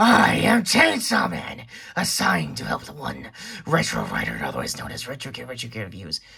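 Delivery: very low, deep, glitchy demon voice. In a skit, a character introduces himself when asked, glitchy Chainsaw Man demon voice. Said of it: "did you just break up your voice modulator?".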